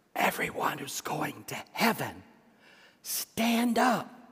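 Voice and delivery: soft, hushed, very quiet, barely above a murmur. Retelling what he said to everyone in the church, very quietly. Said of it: "he said very quietly".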